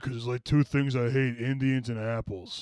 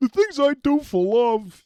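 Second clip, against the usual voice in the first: very high pitch, loud and drawn out; 12 semitones higher, 8 dB louder than usual. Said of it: "That's a great courage impression".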